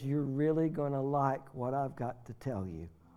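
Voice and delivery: soft put-on voice. Retelling what Dr. Patty said when she came in, imitating Dr. Patty's soft voice. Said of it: "she said in soft voice".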